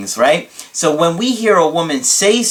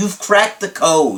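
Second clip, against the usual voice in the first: big, dramatic, gushing, declaratory delivery. Retelling a client's praise on a Skype call: imitating a client's dramatic voice. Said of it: "I can't do his voice that great".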